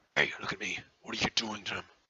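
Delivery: put-on orc monster voice. In a tabletop game, an orc confronts a player's character: orc voice. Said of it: "the orc next to him".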